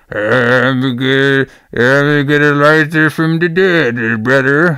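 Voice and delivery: heavy, mumbled voice throughout the whole line. Describing a guy who sounds like Freeze, doing a mumbled Freeze voice. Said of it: "with his like fucking mumbled voice".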